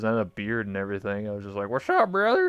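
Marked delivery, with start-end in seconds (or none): 1.7-2.5 very high put-on hillbilly voice. Recalling playing a male avatar in vr chat, greeting someone in a put-on hillbilly voice. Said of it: "pretend I was a hillbilly".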